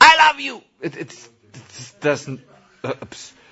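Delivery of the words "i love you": shrill, very loud shout at full volume. Demonstrating the wrong way to say I love you: shouted. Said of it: "you can't shout, I love you! ... This is not how you say it".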